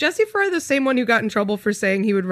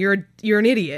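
usual speaking voice

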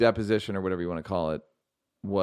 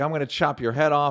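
put-on hollering, raised and high-pitched; 7 semitones higher, 5 dB louder than usual. Retelling a movie dad threatening his little kids: imitating someone yelling. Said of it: "but he's yelling like".

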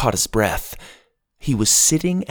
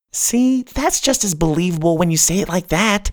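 usual speaking voice

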